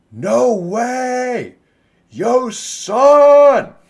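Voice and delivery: very loud, high, booming yell. Game master voices a character calling over a player's shoulder, booming shout. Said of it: "calls out with a booming voice as loud as he can".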